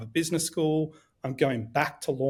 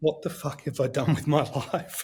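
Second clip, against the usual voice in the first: words said in tears. Retelling words said in tears while soaked in a kitchen: retelling words said in tears. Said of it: "leaning against this oven in tears".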